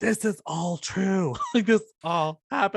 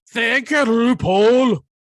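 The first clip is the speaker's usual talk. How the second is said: very loud, aggressive, high-pitched belted voice; 7 semitones higher, 8 dB louder than usual. Talking about the Drag Race finale, thanking RuPaul in an aggressive Lawrence Chaney voice. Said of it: "that voice is like so aggressive".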